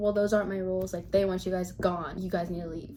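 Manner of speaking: ordinary talk, nothing marked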